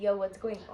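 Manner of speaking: usual speaking voice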